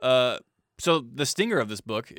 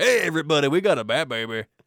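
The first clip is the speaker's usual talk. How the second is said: loud, high, brash, hyped radio shock jock voice; 5 semitones higher, 5 dB louder than usual. Speaker redoes his own bit about a news rumor, in a shock jock voice. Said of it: "Sounds like a shock jock".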